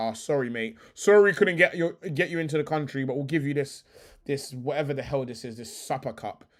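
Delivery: ordinary talk, nothing marked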